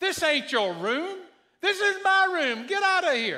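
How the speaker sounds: high-pitched, loud, startled scream.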